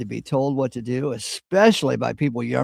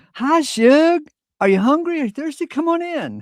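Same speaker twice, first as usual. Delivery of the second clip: put-on loud, very high, hospitable, warm Southern accent; 5 dB louder than usual. Retelling how a southerner answers a knock at the door: imitating a welcoming southerner. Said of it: "you go down south and you knock on the door, they say".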